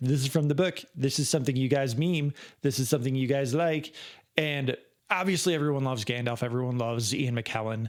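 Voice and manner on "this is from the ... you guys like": normal talking voice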